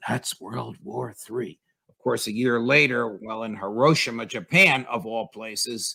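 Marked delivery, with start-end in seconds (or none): 0.1-1.6 soft, hushed stage whisper under the breath. Quoting what President Biden said a year ago, retelling a half-whisper. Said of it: "and then he whispers".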